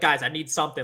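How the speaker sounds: imitated panicked, freaking-out voice. Retelling a plea to teammates on the mic: retelling freaking out. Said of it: "I'm freaking out".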